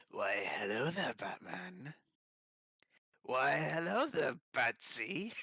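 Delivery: put-on villainous clown voice. Try the voice you dream of doing, greeting Batman in a Mark Hamill Joker voice. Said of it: "My dream is to do a Mark Hamill Joker".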